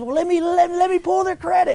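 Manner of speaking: put-on worked-up excitement. Retelling what a guy said after a sale, acting out his excitement. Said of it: "he gets all excited, and he says".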